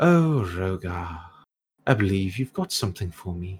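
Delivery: gleeful, cheery, eager, expectant tone. Voicing a robed sorceress greeting the player's character: greeting with a massive smile. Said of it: "she greets you with a massive smile and goes".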